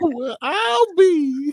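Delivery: very high, fake swooning, fainting old-time lady voice. Joking about someone suddenly going faint, speaker acts out a mock-swooning 1940s woman. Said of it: "faint like a 1940s woman".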